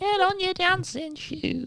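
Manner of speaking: very high, slow falsetto with Yorkshire accent.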